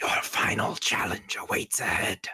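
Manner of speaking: ghostly, otherworldly calling voice. Game master voicing the call heard as the wall slides apart; ghostly voice. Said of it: "you hear a ghostly voice call out".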